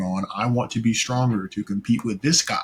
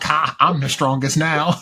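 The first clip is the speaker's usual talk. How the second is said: high, mocking, laughing taunting tone; 5 semitones higher, 4 dB louder than usual. Retelling an anime fight where a character beat up Gohan: acting out laughing at him. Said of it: "he was laughing at him like".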